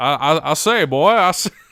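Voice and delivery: blustery cartoon rooster drawl. Speaker mocks a man's habit of saying boy, in a Foghorn Leghorn voice. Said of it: "His foghorn leghorn ass".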